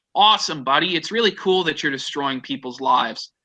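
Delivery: ordinary delivery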